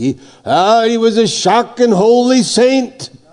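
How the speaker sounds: put-on heavy Irish accent. Retelling a schoolboy's answer from a class interview, in a thick Irish brogue. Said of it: "said in an Irish brogue, you know, very thick".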